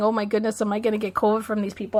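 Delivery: plain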